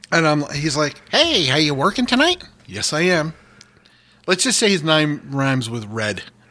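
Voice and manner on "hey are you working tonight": friendly, cheery cartoon-neighbor voice, pitched up. Retelling a nice guy who came up to him, the speaker does a Ned Flanders voice. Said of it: "as soon as I do the voice".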